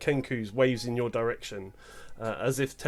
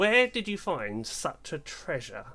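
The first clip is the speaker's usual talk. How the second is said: put-on croaking old hag voice with swooping pitch; 4 semitones higher than usual. Narrating the scene, the speaker voices the hag addressing the group: croaking hag voice. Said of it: "the hag croaks".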